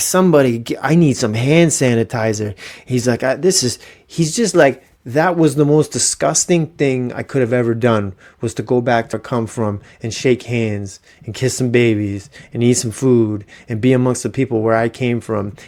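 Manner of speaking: ordinary talk, nothing marked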